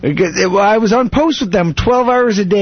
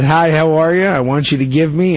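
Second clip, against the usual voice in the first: plain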